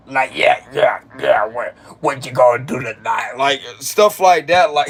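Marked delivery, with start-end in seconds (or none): 0.1-3.3 put-on low, frog-like older man's voice. Describing how some older people talk; imitating a frog-type old voice. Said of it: "it's got like a frog type of sound".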